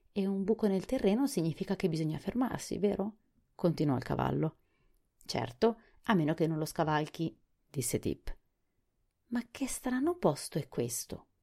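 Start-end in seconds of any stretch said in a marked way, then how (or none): 9.3-11.2 surprised exclamation, high and swooping. The creature, just brought to life, asks Tip about this place, exclaiming in surprise. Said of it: "esclamò sorpresa la creatura".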